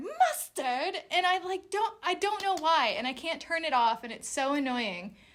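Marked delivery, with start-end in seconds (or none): 0.0-1.0 high, whimsical mock character voice. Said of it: "I hear".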